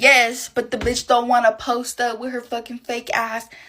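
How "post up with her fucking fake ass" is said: ordinary talk, nothing marked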